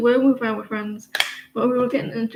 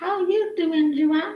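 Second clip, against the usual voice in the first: put-on high, little cat voice; 6 semitones higher than usual. Speaking for her cat as it smiles at her, in a cat voice. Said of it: "He said".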